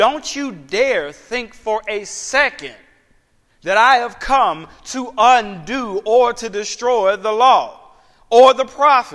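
forceful, insistent, emphatic delivery, drawn out. Speaker renders Jesus' words as he said them, retelling an emphatic statement. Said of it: "he's saying it really emphatically".

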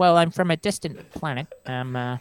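put-on high-pitched Boston accent. Imagining Bill Burr cast in a Star Wars scene: Bill Burr Boston accent impression. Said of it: "Bill Burr with his Boston accent".

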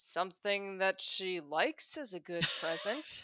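acted dry-edged, sardonic, sarcastic voice. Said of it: "Mister Rabbit has a sardonic edge".

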